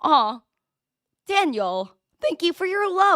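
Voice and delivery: high voice cracking and breaking on the words. Host thanking a listener by name on a live show: voice cracking. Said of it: "sorry, my voice just cracked".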